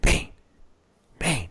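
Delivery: loud whisper-yell. Acting out how she calls the dog, acting out a whisper-yell. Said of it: "Whisper yelling".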